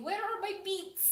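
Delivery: put-on Russian lady voice. A streamer demonstrating the voice they keep slipping into: little Russian lady voice. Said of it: "Little Russian lady".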